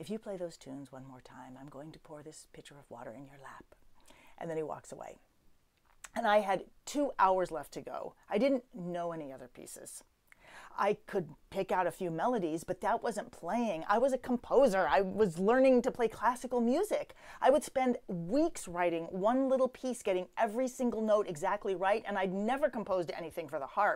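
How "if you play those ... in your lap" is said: soft, sweetly whispered. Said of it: "he says, very sweetly".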